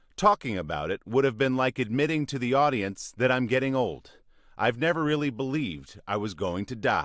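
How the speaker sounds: normal talking voice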